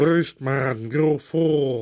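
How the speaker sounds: gurgling voice. Doing a short cartoon-villain impression to show how a drowning sea character is voiced. Drowning gurgling voice. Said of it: "You just gotta sound like you're drowning".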